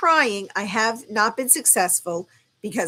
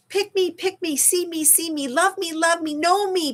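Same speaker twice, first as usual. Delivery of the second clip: put-on high childlike voice; 8 semitones higher than usual. Speaker voices her younger self wanting to be heard, in a child voice. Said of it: "that's my child voice".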